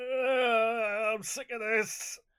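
very slow, high, loud whiny moan with long I'm. Asked to do their whinge voice, speaker uses a whining, complaining voice. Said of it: "Do your whinge voice".

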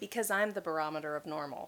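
ordinary talk

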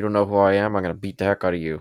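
mock aggressive, threatening-sounding voice. Quoting a character's threat while discussing his voice: imitating an aggressive voice. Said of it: "he's got that really aggressive side".

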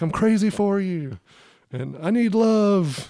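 very slow, high, drawn-out yell. Retelling what a woman yelled to snap the speaker out of a trance, retelling her yelling. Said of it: "she's yelling at me".

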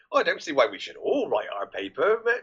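plain

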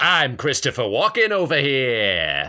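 showy game show voice with the final "here" stretched out. Answering a lightning-round request for an impression: Christopher Walken impression. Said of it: "give me a Christopher Walken".

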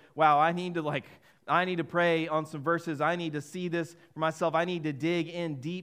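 plain

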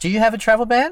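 high-pitched, loud, incredulous tone.

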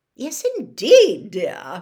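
very loud, swooping, trilling sing-song. Swinging forward to admit Harry, the lady trills her reply. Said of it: "she trilled".

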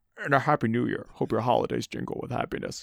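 breathy, whispery voice with slight Scottish accent. Reading a greeting card line in a put-on voice: Buffalo Bill voice. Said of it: "That was slightly Sean Connery".

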